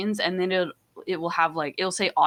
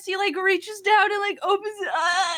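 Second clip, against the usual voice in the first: higher-pitched put-on tearful crying voice; 14 semitones higher than usual. Retelling filming a phone story about a game while in tears: imitating own tearful voice. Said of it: "in tears still".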